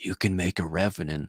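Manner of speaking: acted, imitated whisper. Speaker acts out a desktop icon talking to them, imitating a whisper. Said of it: "He's whispering".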